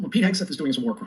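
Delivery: ordinary delivery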